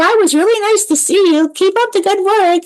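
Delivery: voice lifted into a high-pitched register. Retelling her own goodbye to a woman she had been smiling with, in a high voice. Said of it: "my voice gets high".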